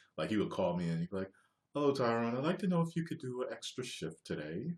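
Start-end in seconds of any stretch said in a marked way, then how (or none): 1.8-4.7 really, really courteous, overly cordial, polite voice. Retelling a phone call from a guy, imitating Lloyd's overly cordial speech. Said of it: "he always spoke really, really cordially".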